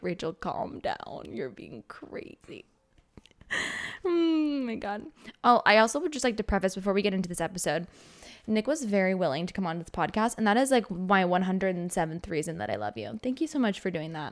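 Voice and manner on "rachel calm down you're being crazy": mock voice, low, slow and hushed. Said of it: "he's looking at me like".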